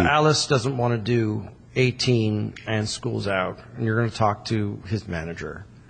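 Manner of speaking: ordinary talk, nothing marked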